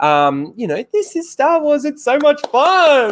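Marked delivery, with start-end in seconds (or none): 0.9-3.1 very high, condescending, talking-down primary teacher voice. Mocking a show host as a primary school teacher teaching kids: imitating Christina Ariel's condescending tone. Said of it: "a primary school teacher teaching kids".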